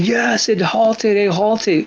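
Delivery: put-on yelling, stretched out and pitched high. Retelling thinking a rising stock halted: imitating himself yelling. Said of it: "So I'm yelling".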